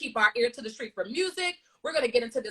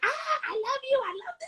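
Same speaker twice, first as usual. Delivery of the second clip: put-on very high, tiny little kid voice; 14 semitones higher, 3 dB quieter than usual. Praising someone's Valentine's for their little ones, echoing the kids in a little kid voice. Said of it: "Their little voices of like".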